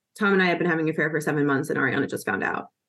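low, flat deadpan with no feeling. Retelling what one woman said to another at the bar; retelling a deadpan line. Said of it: "just deadpan is just like".

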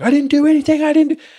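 put-on very high shrieking scream. Retelling a paintball argument, Jay answering his accuser: imitating Jay screaming. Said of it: "they're just screaming at each other".

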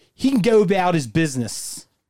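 put-on Philadelphia accent throughout, pitched a bit high. Redoing a movie scene all in a Philly voice: Philly accent. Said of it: "I'm going to do it all in Philly voice".

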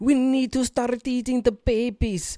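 put-on Russian accent, very high-pitched and slowly drawn out. Retelling what a woman in a video said: imitating a Russian accent. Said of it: "she has, like, a Russian accent".

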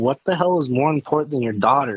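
ordinary delivery

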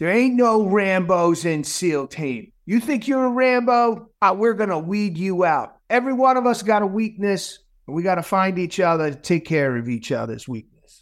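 put-on heavy Boston accent. Retelling what a seal instructor in basic training would say, in thick boston accent. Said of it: "the thick Boston accent".

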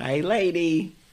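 very high-pitched put-on voice. Doing a quick impression of a line: Jerry Lewis voice. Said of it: "that sounds like Jerry Lewis".

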